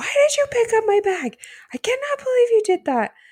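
very high, loud yelling outburst with swooping pitch. Retelling how a contestant yelled at his partner: imitating someone yelling. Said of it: "is yelling at her".

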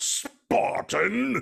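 put-on voice spitting the word out with disdain. Showing how the character said the word, spitting it out with disdain. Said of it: "he would kinda spit it out".

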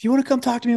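high, yelled delivery. Recounting how a mother yelled back at her daughter, retelling a yell. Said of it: "Her mom yelled back at her".

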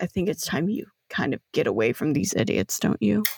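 very low, hushed whisper close to ear. Narrating an uncle's voice heard at the back of a character's head, whispering. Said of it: "you can just hear him whispering".

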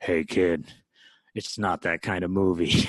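low, loud, slow movie-star delivery. Retelling a filming story, quoting a co-star: Harrison Ford impression. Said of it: "Mark Hamill's Harrison Ford impression".

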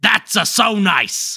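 pack-a-day smoker voice, somewhat angry. Auditioning for a role, doing a pack-a-day smoker Mario voice. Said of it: "pack-a-day smoker Mario that you're doing".

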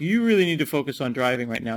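ordinary talk

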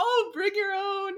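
very high, slow, nervous voice.

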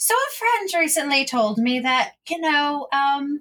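sweet, high put-on voice. Speaking in character to Peter, slipping into the Peter voice. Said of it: "I'm doing the Peter voice".

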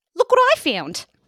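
put-on shrill, very high, very loud Australian accent. Imitating a friend's daughter finding a spider, australian accent imitating a friend's daughter. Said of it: "that is an impression of, um, Claire's daughter".

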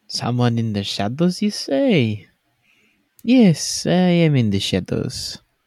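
put-on slow French accent with swooping pitch. Voicing someone in the shadows who answers the group: french accent. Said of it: "why this guy also sounds French".

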